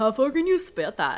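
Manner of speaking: goofy, dopey, dim-witted doofus character voice. Reading a story aloud, voicing the character David: doofus voice.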